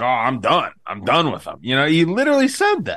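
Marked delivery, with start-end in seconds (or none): 0.0-1.6 put-on heated, properly mad angry outburst. Teasing another speaker by retelling his words: imitating Ghost angry. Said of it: "You got so mad, Ghost... You were like".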